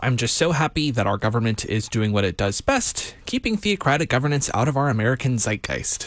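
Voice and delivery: normal talking voice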